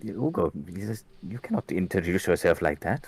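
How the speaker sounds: very quiet. In a role-playing game, one character speaks to another, speaking very quietly. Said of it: "He says it like really quietly to him".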